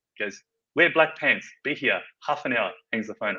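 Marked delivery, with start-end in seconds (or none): 0.8-2.7 put-on heavy Polish accent, laid on thick. Retelling a phone call offering kitchen work, imitating Mark's thick Polish accent. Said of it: "thick Polish accent".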